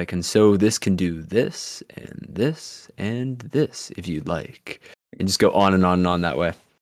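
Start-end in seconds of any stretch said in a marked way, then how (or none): 0.1-4.8 slow, deep, late-night infomercial announcer voice. Imitating another speaker narrating setup like a shopping channel host: deep radio voice. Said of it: "like you're reading out instruction manuals on".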